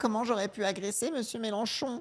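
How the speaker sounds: high, soft mock fragile little-woman voice. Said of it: "avec ma petite voix".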